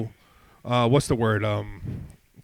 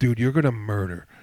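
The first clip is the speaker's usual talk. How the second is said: put-on whispering voice; 2 semitones lower than usual. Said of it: "Chris whispered away".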